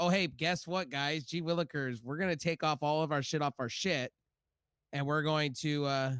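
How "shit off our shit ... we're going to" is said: normal talking voice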